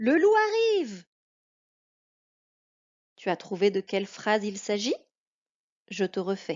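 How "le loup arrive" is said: fearful, frightened cry, very high-pitched. Showing a listener how tone of voice carries emotion, a frightened exclamation. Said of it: "je montre une émotion. Je crois que c'est la peur".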